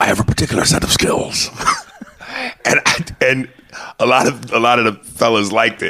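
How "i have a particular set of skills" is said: put-on whispered, gravelly voice. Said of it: "I would quote Liam Neeson from Taken".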